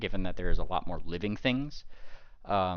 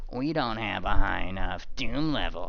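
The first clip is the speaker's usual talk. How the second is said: teasing, scornful, snide tone with a snicker; 4 dB louder than usual. Voicing a character who repeats a complaint about the rave: mocking. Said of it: "he says, like, almost, like, mockingly".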